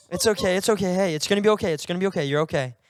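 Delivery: mock soothing, calming voice. Acting out how the speaker calmed her down at midnight, retelling soothing words. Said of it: "I'm just like calming her down".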